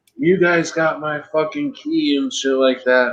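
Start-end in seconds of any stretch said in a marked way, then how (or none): 0.2-2.2 play-acted heated yelling, kept mild. Retelling how a man got out and started yelling: imitating someone yelling. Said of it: "he starts yelling".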